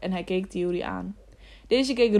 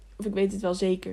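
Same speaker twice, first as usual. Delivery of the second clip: usual speaking voice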